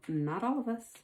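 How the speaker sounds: soft half-whisper. Retelling what a young woman half-whispered to herself in class: imitating a half-whisper. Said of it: "she just kind of whispered to herself".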